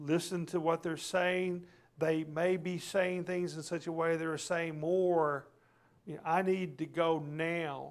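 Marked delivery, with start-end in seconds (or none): 7.3-7.9 stress on the word "now". Showing how someone might voice an urgent need: stress on NOW. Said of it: "the emphasis is on now".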